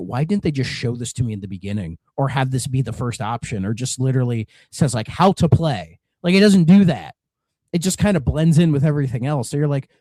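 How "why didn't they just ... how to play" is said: usual speaking voice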